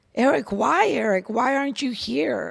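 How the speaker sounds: acted screaming. Retelling screaming at her son Eric while driving: imitating her own scream. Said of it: "I even scream at Eric".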